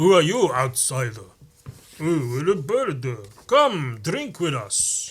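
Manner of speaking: put-on slow, swooping old-world vampire voice. Retelling what an ancient Nord said to an outsider, in a vampire-like voice. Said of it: "I don't know why he sounded like a fucking vampire".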